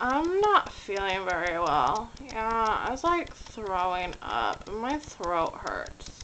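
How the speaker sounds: soft, groggy, just-woke-up voice. Speaker demonstrates calling in sick to work right after waking, groggy morning voice. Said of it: "you have like the groggy morning voice and just be like".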